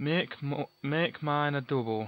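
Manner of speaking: put-on Yorkshire accent, tried out. While playing, choosing a large medipack, in a Yorkshire accent. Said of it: "I'm trying to do a Yorkshire accent".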